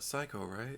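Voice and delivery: very quiet, hushed, hedging, unsure. Naming next week's film, unsure if it is right: said really quietly. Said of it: "I said it really quiet".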